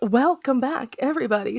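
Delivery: put-on public-radio announcer voice. Welcoming everybody back, in an NPR voice. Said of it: "I keep doing this N P R voice".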